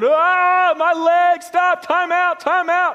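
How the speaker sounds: very high, very slow, drawn-out cry of pain. Retelling a story about a man lying on the ground, imitating a man crying out. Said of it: "He's crying out".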